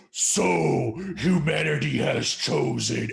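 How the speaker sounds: loud, booming, very slow delivery. Retelling what a game voice says after the ghost is shot: imitating a deep voice. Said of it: "this deep voice".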